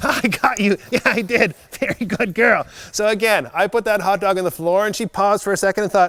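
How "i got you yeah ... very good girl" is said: happy, upbeat, slow, excited tone. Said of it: "that exciting tone in my voice".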